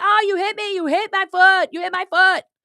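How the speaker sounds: shrill mocking scream, pitched way up. Retelling a foot in a closing door, imitating someone yelling and screaming. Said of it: "he's yelling and screaming".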